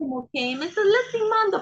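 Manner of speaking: put-on very high, tiny, squeaky baby voice. Recalling an argument where Miguel grabbed her arm hard: Mía's baby voice. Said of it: "pero así como con su vocecita de bebé".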